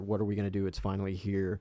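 ordinary talk

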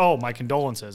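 acted, heavily sarcastic, snappy retort tone. Retelling their own reply to visitors from Birmingham, retelling a very sarcastic snap. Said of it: "said snapped that very sarcastically".

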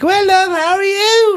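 put-on very high, loud drunk girl's voice. Retelling meeting a girl in a takeaway: imitating a loud drunk girl. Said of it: "pure fucking loud drunk".

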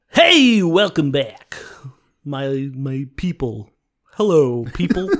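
put-on radio broadcaster voice. Host welcoming listeners back after a break, in a radio announcer voice. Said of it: "I like doing the radio voice".

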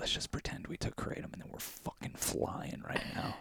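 whispering. Retelling leaning over in class to whisper to the listener, whispered. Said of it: "I leaned over and I whispered to you".

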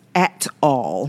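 each syllable of at all enunciated, heavily stressed. Quoting how my mom would say it's not funny: stressing every syllable of 'at all'. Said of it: "as my mom would say, with emphasis".

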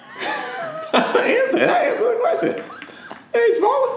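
laughing while speaking the words.

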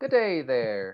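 put-on Irish brogue. Listing impressions for an upcoming comedy show, the speaker does an irish accent impression.

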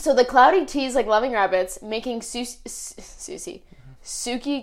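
ordinary delivery

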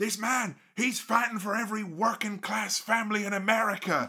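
all-out, high, fevered, rousing scream. Describing a match's final stretch, the speaker acts out what he screamed: retelling someone screaming. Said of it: "he screams".

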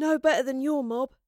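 said through a yawn. Astrid answers Gaius, yawning. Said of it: "yawned Astrid".

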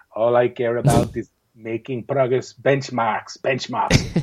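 blunt, unsentimental, no-nonsense coach voice. Imitating a coach who only cares about progress: Jurgen Klinsmann impression. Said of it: "pretty good impression".

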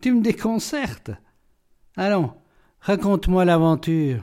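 amused, entertained, egging-on exclamation. Narrator reads one character speaking to another, amused. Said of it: "amusé, s'exclama".

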